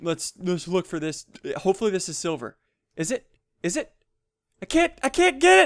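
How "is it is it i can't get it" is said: frantic, freaking-out voice, pitched much higher. Hunting for silver in a game and unable to get it, freaking out. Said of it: "I'm legitimately freaking out right now".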